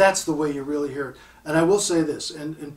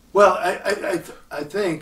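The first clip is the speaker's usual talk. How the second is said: stammering and halting over the opening words; 4 semitones higher, 3 dB louder than usual. Speaker explaining a point to Joe, stuttering. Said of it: "and I'm stuttering".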